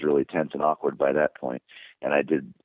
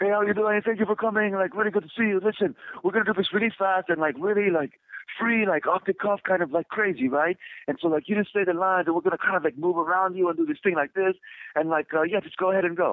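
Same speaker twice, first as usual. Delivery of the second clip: very high-pitched put-on European accent. Telling a story, quoting the man who greeted them on arrival, European-sounding accent. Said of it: "European sounding accent".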